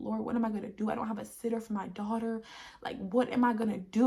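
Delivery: tearful crying voice, crying out. Retelling a past prayer about having no sitter, reenacting own past crying. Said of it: "And I was just crying".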